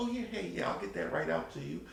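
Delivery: very soft, hushed, agreeable, polite phone voice. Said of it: "Like the whole voice change".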